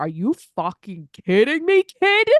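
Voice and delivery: slow, drawn-out father's voice. Imitating a father answering a whining phone call: Ed impersonation. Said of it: "That was a good Ed impersonation".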